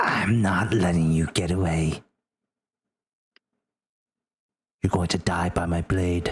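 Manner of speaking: hissing, menacing voice. Game master voices the fake Olive walking up to the player, dagger out: hissing. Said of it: "she hisses to you".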